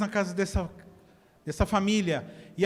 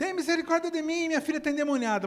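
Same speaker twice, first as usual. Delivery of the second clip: put-on high, crying-out scream; 7 semitones higher than usual. Retelling a mother's plea for her daughter, the speaker imitates a mother screaming. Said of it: "dá um grito assim".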